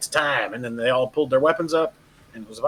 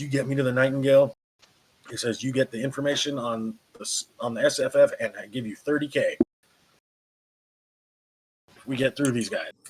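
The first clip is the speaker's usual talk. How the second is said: quiet confidential hushed voice; 3 dB quieter than usual. Game master voicing a character speaking privately to the players, hushed voice only you hear. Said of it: "in a tone of voice that only you guys can hear him".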